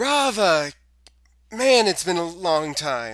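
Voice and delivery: shouting. Voicing a character who arrives and calls out on sight: yelling. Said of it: "immediately, like, yelling".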